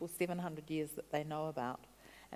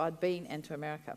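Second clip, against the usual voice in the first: usual speaking voice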